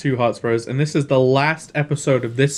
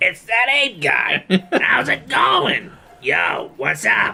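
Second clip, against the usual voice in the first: put-on old-school Brooklyn street accent, higher pitch; 6 semitones higher than usual. Playing a game, imitating the Sligs that a co-player says sound Brooklyn; Sligs Brooklyn accent. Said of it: "like really like old school like Brooklyn accents".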